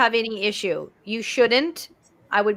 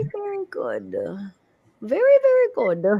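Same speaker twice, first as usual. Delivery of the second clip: sing-song, put-on elderly Irish woman's accent; 8 semitones higher than usual. Speaking to Benno about his healing work, in an old Irish woman voice. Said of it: "I know I sounded like an old woman".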